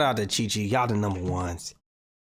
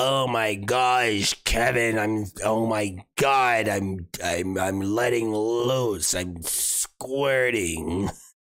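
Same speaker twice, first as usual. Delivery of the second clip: dragging, very slow, raspy-smoker's voice. Retelling what a woman said, imitating her cigarette voice. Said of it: "She got the cigarette voice".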